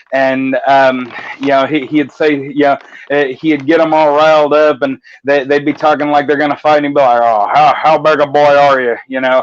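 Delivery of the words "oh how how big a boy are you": put-on country accent. Retelling a man's catchphrase that riled up his opponents: stereotypical redneck accent. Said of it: "he'd have this real stereotypical redneck accent".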